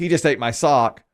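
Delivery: normal talking voice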